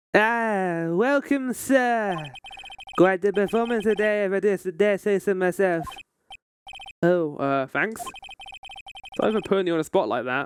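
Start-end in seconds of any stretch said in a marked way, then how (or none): 0.1-5.8 put-on French accent, slow and drawn out. Player voicing a hotel character in the game: French accent. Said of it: "I forgot I gave you a French accent".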